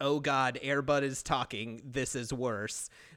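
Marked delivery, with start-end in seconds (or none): none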